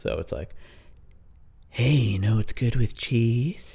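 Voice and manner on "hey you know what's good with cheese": clearly female talking cat character voice. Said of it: "by the sound of the voice of the cat, you can tell it's female".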